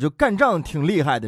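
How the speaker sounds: ordinary talk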